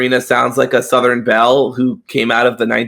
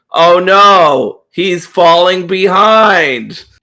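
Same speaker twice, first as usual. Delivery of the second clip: deadpan mock concern, dry heavy sarcasm, pitched up, long "no"; 6 semitones higher, 4 dB louder than usual. Recounting a dungeon portal scene in a game, imitating Julay's sarcasm. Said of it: "Julay's like very sarcastically".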